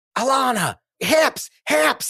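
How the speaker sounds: very high, shrill screaming. Retelling a mom coaching her daughter's dance: imitating a mom screaming. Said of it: "screaming at her".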